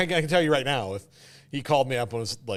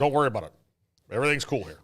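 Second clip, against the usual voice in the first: reassuring, dismissive tone. Retelling how a president recruited his vice president, Nixon impression. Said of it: "How was my Nixon".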